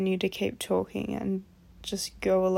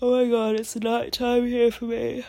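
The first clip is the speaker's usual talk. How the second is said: louder, spoken mid-yawn; 3 semitones higher, 6 dB louder than usual. Talking to viewers about a recent video at night, yawning. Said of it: "And I'm yawning, sorry".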